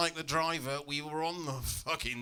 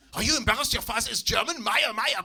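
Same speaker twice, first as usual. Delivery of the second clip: put-on high-pitched whiny upset old man voice, German accent. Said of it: "He doesn't like me saying Mayor".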